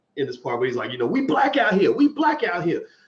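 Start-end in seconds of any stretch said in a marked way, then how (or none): 1.0-2.8 acted, animated, a little heated and worked-up tone. Recapping a debate, imitating Steve getting animated. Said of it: "got a little bit animated".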